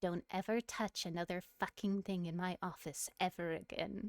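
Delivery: hushed whisper. The narrator voices a character whispering into the listener's ear: whispering. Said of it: "she whispers into your ear".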